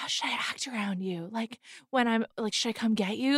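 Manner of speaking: very quiet, very soft whisper. Retelling what she asked while she starts whispering: imitating someone whispering. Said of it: "she starts whispering".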